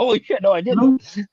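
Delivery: play-acted very high, loud, drawn-out astonished exclamation. Retelling another speaker's surprised answer about new additions: imitating someone surprised. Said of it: "He's like".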